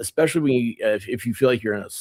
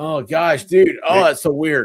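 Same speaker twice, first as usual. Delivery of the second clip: usual speaking voice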